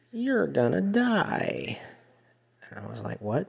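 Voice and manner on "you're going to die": very high, swooping, eerie witch-like voice. A server retells what a lady at the table told them: creepy witch-like voice. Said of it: "in the most creepy, witch-like voice".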